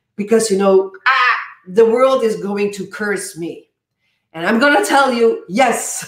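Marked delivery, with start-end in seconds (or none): none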